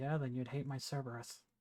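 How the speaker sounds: soft, hushed stage half-whisper. Half-whispering back to another character about the smell, in-character half-whisper. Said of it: "I whisper to you".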